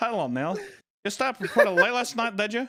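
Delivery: very high talking-doll voice. Mimicking the talking doll that just greeted Neil: imitating the doll's accent. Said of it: "What is this accent?".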